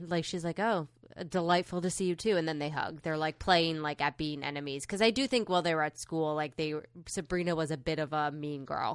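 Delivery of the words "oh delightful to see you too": ordinary talk, nothing marked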